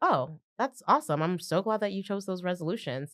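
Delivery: acted-out mock-dry tone. Retelling his own reply to her in a past conversation, in his dry tone. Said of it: "I do speak with a dry tone".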